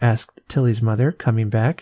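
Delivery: ordinary delivery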